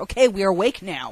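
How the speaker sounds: plain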